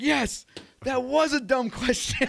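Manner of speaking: very high, shrill, really loud shout. Retelling a sale, speaker reenacts his own reply to a customer: retelling own loud yes. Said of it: "like real loud".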